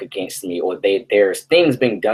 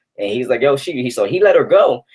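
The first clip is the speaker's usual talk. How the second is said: normal talking voice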